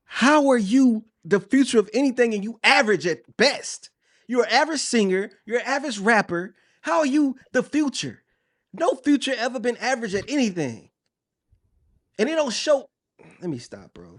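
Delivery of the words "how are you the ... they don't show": getting loud, high-pitched, heated and ranting hard. Speaker ranting about an album, yelling. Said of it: "because I'm yelling and I'm getting loud".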